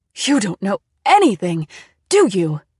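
very loud, swooping cry. A woman answers the narrator's confused question; cried out. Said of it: "She cried".

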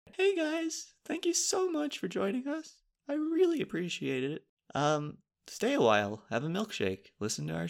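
very high, sing-song, put-on sweet friendliness. Thanking listeners while trying a nice person's mindset, in a fake-nice friendly voice. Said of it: "Let me try something nice".

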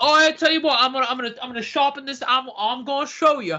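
put-on English football player accent. Joking about being called a big boy, in a typical england striker accent. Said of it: "typical England striker accent".

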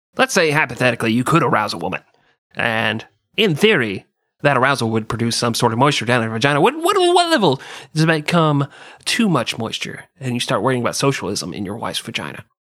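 animated, swooping, argumentative debater's voice. Speaker performs an impression for the other speaker: Ben Shapiro impression. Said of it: "That's my Ben Shapiro impersonation".

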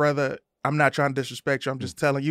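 plain

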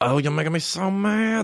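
high, squeaky, funny little voice. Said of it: "we'd just be like".

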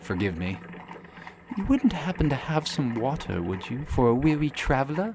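very soft, quiet, soft-spoken feminine voice. Narrator voicing a stranger who approaches a kneeling, praying character, very soft, feminine voice. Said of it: "you hear a very soft, feminine voice".

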